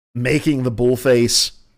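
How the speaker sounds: usual speaking voice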